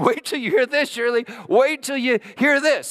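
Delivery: acted-out shouting, shrill and very high-pitched. Retelling a story where someone runs up the walk: imitating someone yelling. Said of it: "just yelling".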